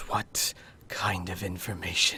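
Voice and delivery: low, soft, sibilant hissing voice. Voicing a man who is being asked for information, hissing. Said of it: "He hisses and says".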